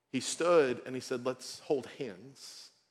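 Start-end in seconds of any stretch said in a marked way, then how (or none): 1.3-2.7 put-on Fijian accent. Retelling a man standing up to lead a prayer, in a deep resounding Fijian accent. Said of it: "In this beautiful, deep, resounding Fijian accent".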